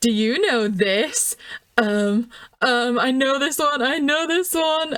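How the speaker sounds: slow, drawn-out, eager, needling, goading tone. Retelling how Muriel winds Velma up: Muriel voice, winding Velma up. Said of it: "just to have Muriel going".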